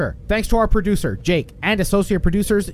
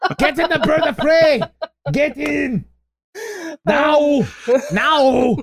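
warrior character voice, commanding; 7 semitones higher than usual. Riffing on a missed casting idea, doing Arnold Schwarzenegger playing a Klingon. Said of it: "Arnold Schwarzenegger playing a Klingon".

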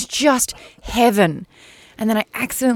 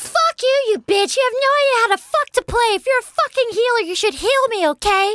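put-on squeaky, very high bratty kid voice; 13 semitones higher than usual. Retelling a little kid cursing at him during a game, Timmy Turner voice. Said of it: "You're playing with Timmy Turner?".

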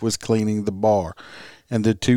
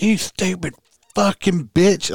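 mock very high, stretched-out shriek, yelling; 9 semitones higher than usual. Retelling how a driver yelled at the victim: imitating someone yelling. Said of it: "She got out and fucking yelled at her".

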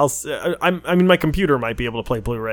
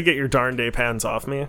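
normal talking voice

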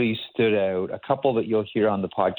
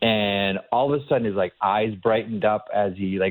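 normal talking voice

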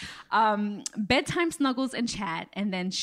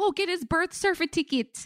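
mock Jamaican accent, higher; 9 semitones higher than usual. Retelling how mom said a phrase: imitating a Jamaican accent. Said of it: "like a true Jamaican".

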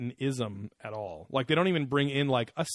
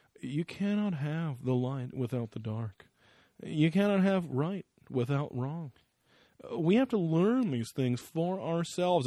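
put-on slow, odd, solemn mystical tone. Quoting a man who has taken on a new way of talking, mock-mystical tone. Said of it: "weird little, like, mystical tone to him now".

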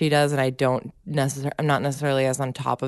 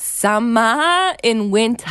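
exaggerated fake Boston accent, drawn-out summer; 8 semitones higher, 4 dB louder than usual. Imitating how other people attempt the accent, in a bad fake Boston accent. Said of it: "When they try to do an impression of it".

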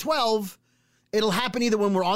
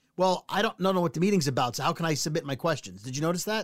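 ordinary delivery

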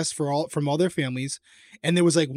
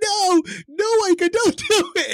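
very high, very slow, drawn-out sobbing; 5 dB louder than usual. Retelling houseguests begging her to stop: imitating someone crying. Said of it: "H O H crying".

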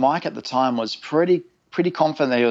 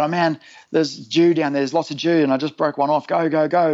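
put-on eager tone, keen but contained; 4 semitones higher than usual. Retelling surfacing from a dive and calling to his dad, retelling a yell. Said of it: "I'm yelling at him".

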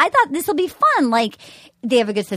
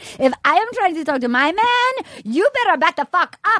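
put-on Latin American accent, pitched higher; 5 semitones higher than usual. Quoting a show's flashback line in the most exaggerated accent ever: imitating Bibiana's accent. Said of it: "get ready for the most racist accent ever".

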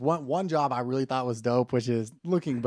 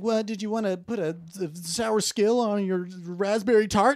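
pitched-up mumble, indistinct, half-swallowed words; 6 semitones higher than usual. Retelling how they mumbled an offer to a yogurt customer: imitating own mumbling. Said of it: ""Why are you mumbling?"".

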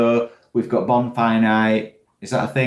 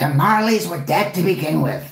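high-pitched put-on comic character voice; 6 semitones higher than usual. Trying a Gonzo voice after being urged to give it a go. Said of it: "considering a Gonzo voice".

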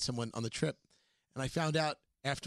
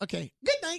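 put-on high-pitched, cooing baby-talk voice; 9 semitones higher than usual. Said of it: "We do baby talk a little bit".

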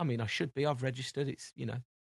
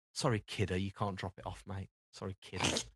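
mock patronising, dismissive, low, condescending tone; 5 semitones lower, 7 dB quieter than usual. Retelling being refused a drop-off, imitating the man's mock-condescending apology. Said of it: "he condescendingly turned around and went".

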